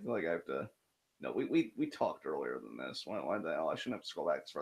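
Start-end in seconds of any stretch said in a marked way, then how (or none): 1.2-4.6 muttering under breath, much quieter and lower. Scrolling back through old messages to find one, muttering under breath. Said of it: "What are you muttering under your breath".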